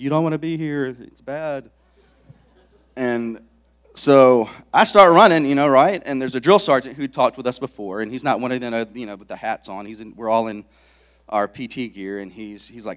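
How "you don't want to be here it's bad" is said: taunting, jeering yelling. Retelling what the crowd around the track yelled: imitating people yelling. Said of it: "they're yelling things like".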